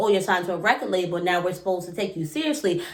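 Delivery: normal talking voice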